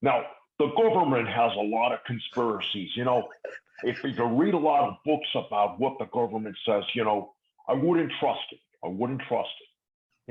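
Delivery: put-on Minnesota accent, leaning into the sound. Asked by another speaker whether he can do it, he tries: Jesse impression. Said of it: "That's my that's my best Jesse".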